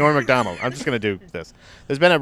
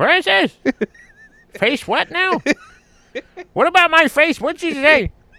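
put-on very high, elderly old man voice; 14 semitones higher than usual. Retelling what an old man with a hearing aid said: old man voice. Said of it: "Your old man voice is so good".

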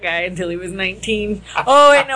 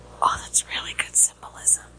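soft, hushed whisper. Retelling what a moviegoer behind said in a quiet theater: imitating someone whispering. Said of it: "I heard the guy behind me whisper".

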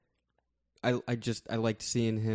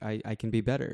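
ordinary talk

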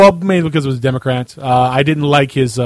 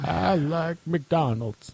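put-on Southern politician voice, quieter; 3 semitones higher, 14 dB quieter than usual. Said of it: "anybody can do it".

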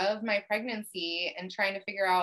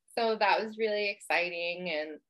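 ordinary talk

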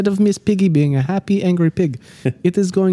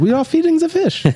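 put-on gentle host voice, German accent, pitched higher; 9 semitones higher than usual. Joining the joke about the old bookstore man: German Mister Rogers voice. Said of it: "He's like German Mister Rogers".

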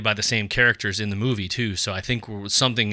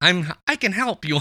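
raised-register phone voice, pitched higher; 10 semitones higher than usual. Showing how people answer a work phone call: work phone voice, higher pitch. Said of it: "you move the register up".

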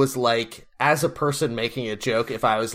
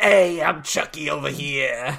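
slow, drawn-out, big-baby cartoon voice; 3 semitones higher than usual. Showing how the Chucky doll sounds to the others: imitating Chucky with Baby Huey voice. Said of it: "he has, like, a Baby Huey voice".

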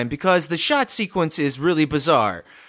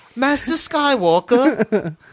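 fake British accent, pitched higher; 7 semitones higher, 3 dB louder than usual. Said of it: "I'm gonna do my British now".

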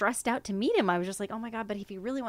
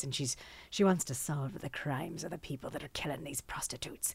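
put-on elderly Irish nun accent, lower and quieter; 6 semitones lower, 6 dB quieter than usual. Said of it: "she kinda sounds like this".

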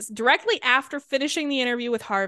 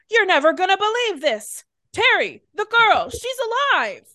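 put-on very high, loud, hollered-out shout; 9 semitones higher, 5 dB louder than usual. Retelling how a captain flings the door open with news, retelling a shout. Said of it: "he shouts".

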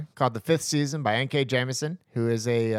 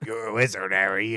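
put-on robot video-game voice; 4 semitones lower than usual. Quoting a line from the PlayStation 1 game, in its robot voice. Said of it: "in the robot voice".

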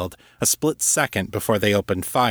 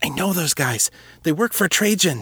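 hissed out urgently, pitched-up words; 8 semitones higher than usual. A frightened woman speaks as knocking comes at the door, hissed. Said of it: "she hissed".

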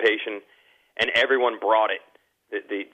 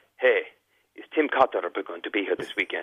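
put-on Italian accent; 3 semitones lower, 4 dB quieter than usual. Retelling what a man said when he came up to him, imitating an Italian accent. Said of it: "I like the and accent".

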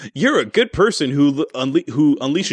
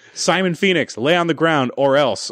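ordinary talk

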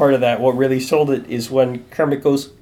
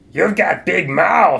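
rough, raspy, creaky puppet voice; 4 semitones higher than usual. Recapping Animal's line from tonight, the speaker does the Animal voice. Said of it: "I don't know if I can do an animal voice".

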